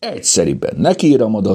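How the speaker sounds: ordinary delivery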